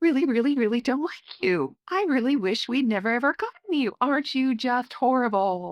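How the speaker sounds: sweet, high, affectionate, adoring loving tone. Speaker shows harsh words to a puppy spoken in a loving sweet tone. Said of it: "That tone says, "I love you."".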